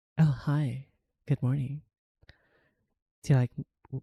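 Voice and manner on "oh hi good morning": soft whisper. Greeting a listener close to the microphone: whispering. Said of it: "me whispering into your ears".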